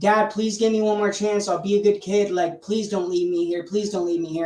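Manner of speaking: put-on urgent, pleading child voice, begging. Retelling how they begged their parents for one more chance: imitating own past begging. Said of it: "begging my, my parents".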